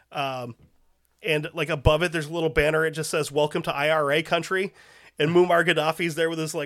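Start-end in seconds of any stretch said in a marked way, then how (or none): none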